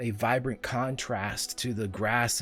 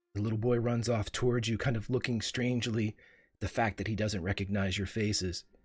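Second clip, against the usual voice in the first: plain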